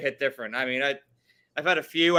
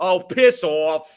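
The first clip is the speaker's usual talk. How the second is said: New York-accented delivery; 3 semitones higher, 6 dB louder than usual. Brushing off friends teasing him by name, in a new york accent. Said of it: "now you sound like a New Yorker again".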